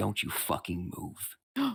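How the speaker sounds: threatening, menacing voice. Voicing Arthur holding a character at knife point: threatening as Arthur. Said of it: "suddenly you hear".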